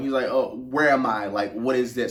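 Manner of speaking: usual speaking voice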